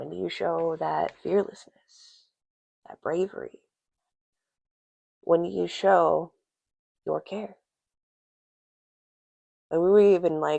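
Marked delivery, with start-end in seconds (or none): 0.0-7.5 soft, quiet, gentle hushed whispering voice. During a tarot reading, the speaker asks listeners reflective questions: soft quiet whisper. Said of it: "in the soft, quiet whisper voice".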